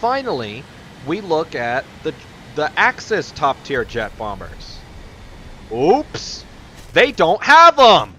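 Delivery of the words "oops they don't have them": very loud, swooping, pitched-up yell. Comparing top tier jet bombers and finding the Axis have none, yelling. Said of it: "I didn't mean to yell there".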